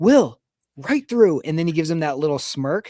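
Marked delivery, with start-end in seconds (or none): 0.0-1.4 high-pitched, loud yelling. Retelling a head coach yelling to his kicker before a big kick: imitating Sean Payton yelling. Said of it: "when he's yelling".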